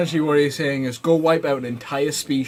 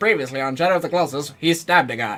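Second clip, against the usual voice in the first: put-on vintage, old-timey radio-style announcer voice. Describing a show's episode recaps to a friend, in Legend of Korra recap announcer voice. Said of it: "You like old-timey radio?".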